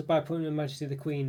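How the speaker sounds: usual speaking voice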